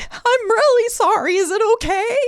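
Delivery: very high, tearful, sobbing voice. Retelling an apology to a man who asks if they're okay; imitating own sobbing. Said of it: "Now I'm sobbing".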